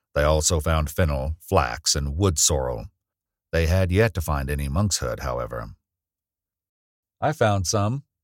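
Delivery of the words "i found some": pleased, proud calling out, pitched up. Gathering plants, [name] calls out to Serena, calling out proudly. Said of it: "He sounded quite proud of himself".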